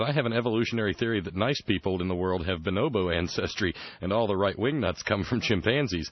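ordinary delivery

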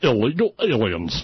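over-the-top radio disc jockey announcer delivery. Mocking how a news host says illegal aliens, Lou Dobbs disc jockey voice. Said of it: "he goes into that disc jockey vomit voice".

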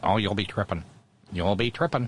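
geeky, uncool, nerdy guy voice.

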